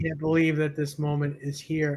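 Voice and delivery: ordinary talk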